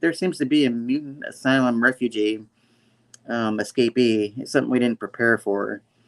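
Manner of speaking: plain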